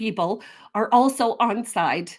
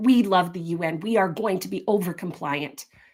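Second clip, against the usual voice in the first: ordinary talk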